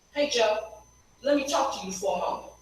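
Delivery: put-on disrespectful tone. Retelling her own words to a board member after a meeting, reenacting her own past tone. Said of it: "in the exact tone".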